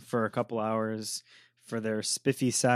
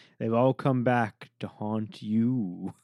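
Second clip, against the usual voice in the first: put-on spooky, creepy horror trailer narration voice. Ending a horror show description the way they all end: creepy voice. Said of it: "all of your descriptions end with the creepy voice".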